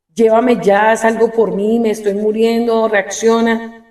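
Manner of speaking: ordinary talk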